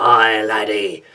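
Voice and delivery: bad, put-on pirate voice. Describing the piratey speech of a pinball table: terrible pirate voice. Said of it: "my terrible pirate voice".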